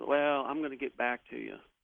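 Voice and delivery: half-swallowed, noncommittal mumble. Retelling own reply to a doctor's bad news: imitating own mumble. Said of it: "I kind of mumbled and said".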